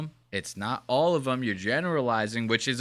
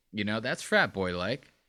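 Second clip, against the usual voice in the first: ordinary talk, nothing marked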